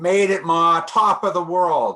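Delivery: high, loud triumphant yell. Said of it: "And he yells out".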